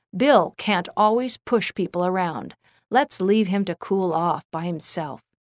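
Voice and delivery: ordinary delivery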